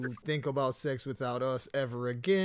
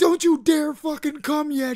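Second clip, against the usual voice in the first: put-on yelling, higher and louder; 14 semitones higher, 12 dB louder than usual. Imagining what a partner would say during a threesome: imitating her yelling. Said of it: "yelling at me like".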